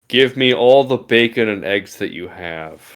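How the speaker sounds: put-on menacing, threatening tone. Ordering continental breakfast by quoting Parks and Rec: mock threatening. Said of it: "That's so threatening when you say it like that".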